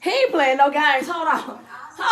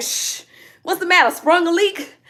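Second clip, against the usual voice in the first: ordinary talk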